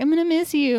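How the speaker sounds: mock mopey sad-boy voice. Retelling a character's goodbye in a film: imitating a sad goodbye. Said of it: "come and be all sad boy and be like".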